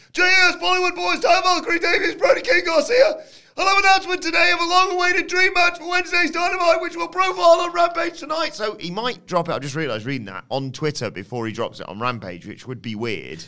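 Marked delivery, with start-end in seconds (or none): 0.1-8.5 very loud, very high, excitable hype announcement. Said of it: "You're doing a Tony Khan impression".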